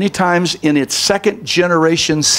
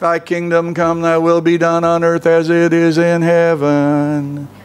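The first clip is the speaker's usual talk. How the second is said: lifeless, flat droning monotone, every word level. Showing how some read powerful Scripture aloud, droning monotone. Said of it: "drone out in the most monotone voice".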